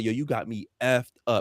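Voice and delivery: ordinary talk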